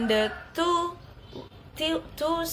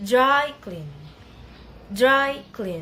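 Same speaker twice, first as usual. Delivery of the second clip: DRY punched loud, CLEAN said lighter. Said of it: "pattern of secondary stress is common for compound word".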